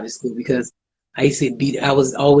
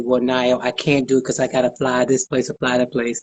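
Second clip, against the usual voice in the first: ordinary delivery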